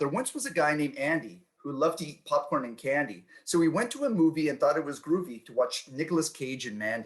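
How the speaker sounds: ordinary talk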